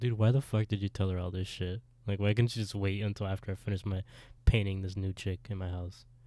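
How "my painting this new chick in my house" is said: normal talking voice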